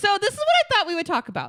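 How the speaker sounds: very high, loud, animated, swooping yell. After reassuring a nervous listener, introducing the planned topic while yelling. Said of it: "I don't know why I'm yelling".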